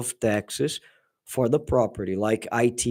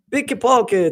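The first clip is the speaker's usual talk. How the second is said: put-on high, cute Italian accent pronunciation; 11 semitones higher, 3 dB louder than usual. Imitating a woman in Italy saying the word: Italian accent. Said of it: "with the pronunciation, the Italian pronunciation, very cute".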